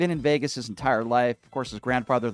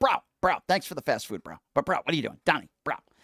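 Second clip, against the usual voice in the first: bro-heavy put-on dude voice, swooping and animated; 3 semitones higher than usual. Play someone talking to Donnie, as an impersonation of someone addressing Donnie. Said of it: "I think that was a very good C one impersonation".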